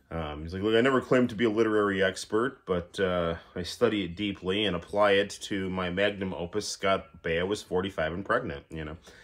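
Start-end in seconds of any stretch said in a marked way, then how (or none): none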